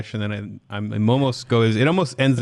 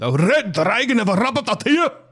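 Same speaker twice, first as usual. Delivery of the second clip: put-on Scottish accent pitched very high; 12 semitones higher than usual. Trying a guy's tip, the speaker says the phrase in a scottish accent. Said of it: "So I say that first".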